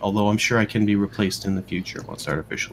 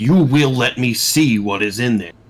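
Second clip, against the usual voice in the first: loud, gruff, pushy pony voice; 3 semitones higher, 6 dB louder than usual. Narrating a game scene, the speaker voices a guard pony heard from inside: gruff guard pony voice. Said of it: "the voice of a guard pony, just gruff and pushing around".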